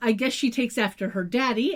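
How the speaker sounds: ordinary delivery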